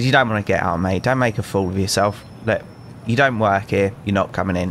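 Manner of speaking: ordinary delivery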